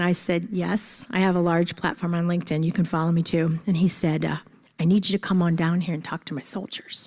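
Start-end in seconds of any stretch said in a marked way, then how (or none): 4.2-7.1 put-on Texan accent with stretched vowels, drawled. Speaker quotes Chaplain Brooks inviting her to speak to his soldiers, Texas accent. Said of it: "he kind of talks like this because he's from Texas".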